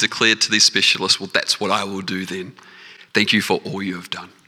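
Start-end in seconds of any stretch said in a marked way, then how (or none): 1.2-4.3 put-on shaky, trembling voice, quieter. Retelling how he thanked the specialists, imitating his shaking voice. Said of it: "with his voice shaking just as much as his hand was".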